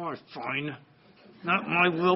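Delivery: slow, grudging, spoken through clenched teeth. A speaker acts out the wrong way to say it, through clenched teeth. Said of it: "If you do it with clenched teeth".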